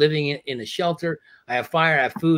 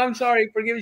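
acted-out crying, voice much higher; 10 semitones higher than usual. Retelling apologizing to a producer after telling a story, acting out crying. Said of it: "totally started crying".

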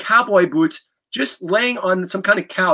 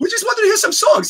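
put-on very high-pitched, pre-puberty boy's voice. Retelling what a young friend said to a rock star: high-pitched voice imitating Tommy. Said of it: "Tommy had his high-pitched voice".

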